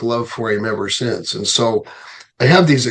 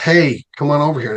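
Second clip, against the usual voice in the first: put-on yelling shout; 4 semitones higher than usual. Retelling calling a man over from a car window: retelling a yell. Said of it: "rolled down my window and yelled".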